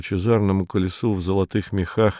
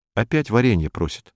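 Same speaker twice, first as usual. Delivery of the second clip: ordinary delivery, nothing marked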